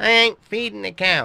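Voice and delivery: very high, very loud, stubborn, mulish farmhand voice. Told to feed the cows, the tractor driver refuses: lazy farmhand voice. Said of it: "Your laziness is going to get you into trouble soon. ... Aye. Fixing me truck".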